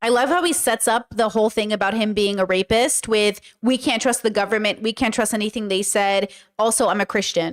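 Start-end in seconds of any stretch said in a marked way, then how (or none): none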